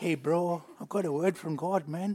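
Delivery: put-on American accent. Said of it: "he'd speak in an American accent".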